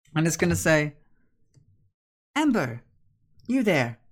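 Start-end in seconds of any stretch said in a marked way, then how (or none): 2.4-4.0 high, swooping, animated voice. Voicing a creature that speaks as a player's voice: imitating Becca's voice. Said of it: "you hear it now speak as Becca's voice".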